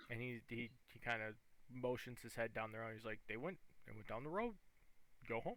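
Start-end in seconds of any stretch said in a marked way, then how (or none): 3.3-5.6 odd put-on talking-dog voice. Voicing a dog who tells the players where the scent went: dog voice. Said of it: "Why you gotta sound like that?".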